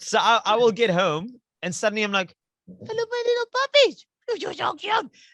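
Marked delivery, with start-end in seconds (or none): 2.7-5.1 put-on very high, cutesy baby-talk voice. Showing how she greets her Boston Terriers when she gets home, in her dog voice. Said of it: "I have a dog voice".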